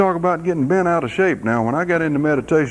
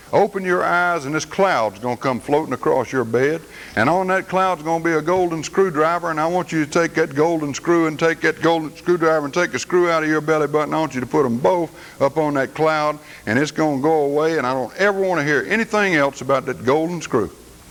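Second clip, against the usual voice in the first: ordinary delivery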